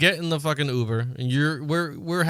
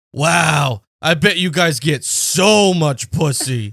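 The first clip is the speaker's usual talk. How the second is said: loud, slow, exaggerated demeaning jeering voice. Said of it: "Like, so exaggerated, so, like, demeaning".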